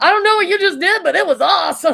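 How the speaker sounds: acted, thrilled high exclamation. Retelling what he said when he woke up: imitating an excited person. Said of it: "he was so excited".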